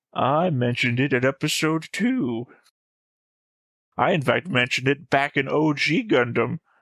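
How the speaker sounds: put-on elderly old man voice, laid on. Claiming to have called a show theory early, in an old man voice. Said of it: "old man voice".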